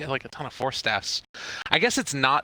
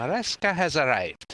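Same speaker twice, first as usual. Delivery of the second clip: put-on, tried-on Scottish accent; 2 semitones higher than usual. A caster commentating a match announces a player in a scottish accent. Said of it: "what do you think of my Scottish accent".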